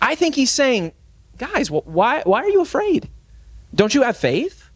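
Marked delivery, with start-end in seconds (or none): 1.4-4.5 play-acted kindly, caring, compassionate, concerned tone. Rereading Jesus's question to the apostles, saying it with compassion. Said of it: "saying it with compassion".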